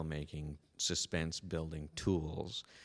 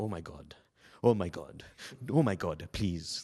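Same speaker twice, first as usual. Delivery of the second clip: put-on strong English accent; 6 dB louder than usual. Retelling a moviegoer's reaction during a horror film: imitating an English accent. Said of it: "had this great English accent".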